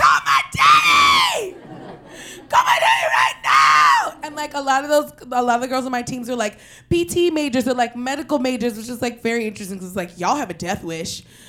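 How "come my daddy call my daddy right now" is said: very low, very loud, booming, drawn-out scream. Recounting the moment she broke her knee at rugby, retelling a scream. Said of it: "I screamed".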